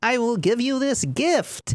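put-on, very high-pitched old wizard voice. Imagining a slighted wizard granting someone a gift, in a wizard voice. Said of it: "that's a pretty solid wizard voice".

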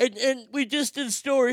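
talking through a yawn. Talking to the audience about a story, yawning while talking. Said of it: "I was yawning there".

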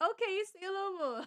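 high, soft, flirty coaxing voice.

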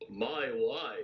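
heavily laid-on put-on Eastern European accent. Answering a request to say a line in a Sebastian Gorka accent. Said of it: "can you say "my wife" in a Gorka accent".

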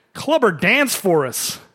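mild, drawn-out jeering call from a crowd. Retelling a man in the crowd before a fight: imitating a man shouting. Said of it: "one guy shouts".

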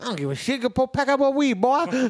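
put-on Cajun accent. Retelling what Beans said when reminded his family was upstairs, imitating Beans's Cajun accent. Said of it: "sounded Cajun and he was from southeastern Indiana".

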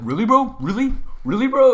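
mock very loud, very high, shrill, riled-up, heated. Retelling how a friend reacted at the table: imitating someone getting heated. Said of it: "he would just get so heated".

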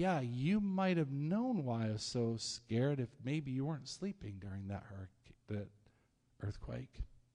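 slightly snarky, talking-back tone. Imagining answering from the boat with a pretend snarky retort. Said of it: "I probably would have got a little snarky".

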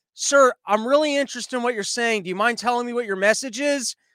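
ordinary talk

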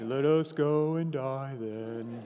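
very slow, dragged-out, pessimistic, doom-laden drawl. Imagining how Thomas sounded, in an Eeyore voice. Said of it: "a bit of a sound like Eeyore from Winnie the Pooh".

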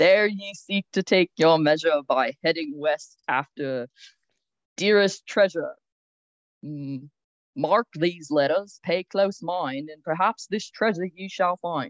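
Australian-sounding accent slipping in accidentally. Reading the first clue aloud to the others, in an Australian accent. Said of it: "sounded australian".

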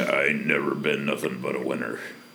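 mumbled put-on character voice. Ending the bit with a mumbled Oppenheimer impression. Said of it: "it ends with him mumbling, ... That's my Oppenheimer impersonation".

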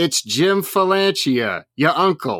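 put-on New York accent. Recalling an uncle's phone calls, imitating Uncle Jim's New York accent. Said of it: "He was like a super like New York type".

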